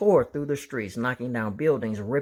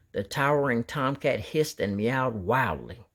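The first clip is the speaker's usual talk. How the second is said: ordinary delivery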